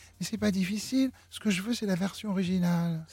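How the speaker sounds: tiny, small little voice. Retelling what a man at rehearsal told the music director, imitating his little voice. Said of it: "il lui dit avec sa petite voix".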